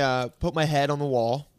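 usual speaking voice

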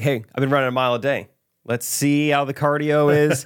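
ordinary delivery

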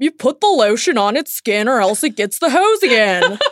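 creepy put-on horror-movie killer voice. Quoting the film to a co-host unfamiliar with the voice, Buffalo Bill voice. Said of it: "he kind of sounds like Buffalo Bill".

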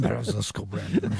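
low, soft muttering under the breath. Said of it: "as I putter around muttering".

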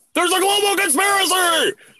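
high-pitched, shrill, loud ranting yell. Ranting at people in a comedy bit, mock yelling rant. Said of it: "And I'm yelling now!".

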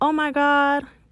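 put-on very high, shocked screaming cry. Retelling being hit by a car while driving, retelling a scream. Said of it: "I'm screaming".

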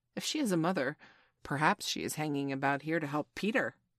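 plain

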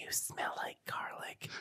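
speaking in a whisper. Acting out leaning in close during a romantic moment, whispering. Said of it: "creepiness with the whisper".

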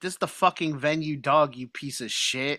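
put-on barked outburst with swearing. Retelling a clash with a man at the door: retelling own yell. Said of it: "I fucking yelled".

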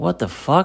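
put-on anger. The speaker recalls talking to themself on the way home, retelling getting mad. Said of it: "I found myself getting mad".

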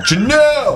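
mock yelling. Retelling backing up to the street and calling out a name, retelling a yell.

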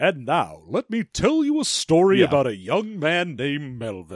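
narrator voice like a fifties sci-fi film. Describing the voiceover of cheap 1950s sci-fi movies: imitating 1950s sci-fi narration voiceover. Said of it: "the same kind of voiceover".

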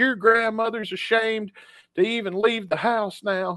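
very high, shrill, loud yell. Telling a story, the speaker is imitating a mom yelling at her son from her car. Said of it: "she's yelling".

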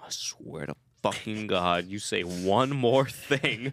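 muttering under the breath. Retelling what the turkey muttered at Sheriff Round, retelling a mutter under breath. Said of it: "under his breath is like".

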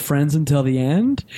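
usual speaking voice

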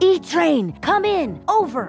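theatrical whisper. Calling a friend codenamed E-Train, parents listening nearby, in a stage whisper. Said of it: "you're stage whispering again".

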